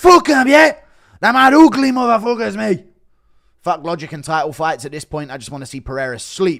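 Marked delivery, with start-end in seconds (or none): 0.0-2.8 very loud, high-pitched yelling. Doing a run of labelled impressions, next a Conor impression trash-talking. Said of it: "Impression of Connor trashing Dagestanis".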